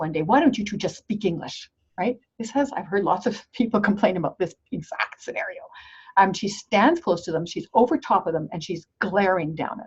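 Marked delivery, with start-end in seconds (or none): 0.2-1.7 acted out in a loud, raised voice. Retelling a woman confronting two people on their break, in a loud voice. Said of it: "she says in a loud voice".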